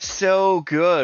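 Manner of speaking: high, icy, sarcastic polar bear voice. Imagining asking a polar bear how it is, the speaker answers as a sarcastic polar bear. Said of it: "with the ice cracking".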